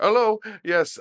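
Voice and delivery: put-on Indian accent. Retelling how Davey got on the phone: put-on Parsi or Indian accent. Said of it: "Parsi or Indian accent".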